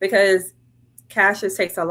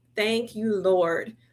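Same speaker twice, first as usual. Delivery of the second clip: put-on tearful crying, quieter; 2 semitones higher, 4 dB quieter than usual. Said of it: "I bawled".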